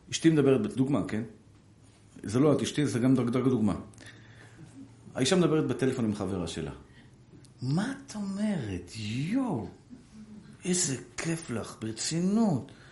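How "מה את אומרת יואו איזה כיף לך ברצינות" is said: very slow, soft, prissy affected drawl. Acting out a wife chatting on the phone with her friend, imitating affected prissy talk. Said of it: "בשפה כזאת, ... של המתייפים האלה".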